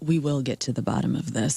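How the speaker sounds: very low, slow, drawn-out angry voice. Friend mimics how moms talk when a kid is in trouble, imitating a mom, slow and low. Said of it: "moms are talking slow and low like that".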